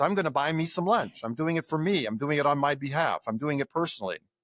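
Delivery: ordinary delivery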